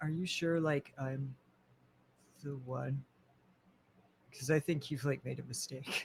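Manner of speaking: very quiet, hushed, confidential murmur in character. Voicing a character who steps closer to ask privately: speaking very quietly in character. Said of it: "and just say very, very quietly".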